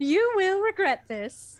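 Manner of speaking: very loud, high-pitched, belted motherly voice. Asked to read the lines for Sonic's mom, voicing Sonic's mom. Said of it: "can you read as Sonic's mom?".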